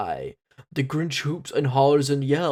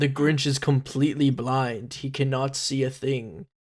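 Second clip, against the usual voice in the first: ordinary delivery, nothing marked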